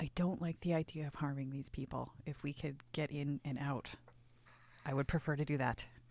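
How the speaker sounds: very quiet, hushed, low murmuring voice. Player speaking in character to the whole party: speaking very quietly. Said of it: "I say to everybody very quietly".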